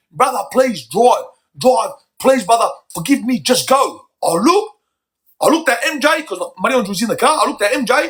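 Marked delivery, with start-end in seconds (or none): 0.2-4.0 mock repeated heartfelt begging, pleading voice. Retelling what the crying wife said from the car: imitating a plea. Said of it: "she's pleading with me".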